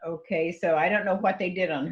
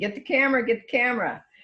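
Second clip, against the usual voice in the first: play-acted, high-pitched screaming; 6 semitones higher, 3 dB louder than usual. Retelling calling to him to get the camera: imitating own screaming. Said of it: "screaming at him".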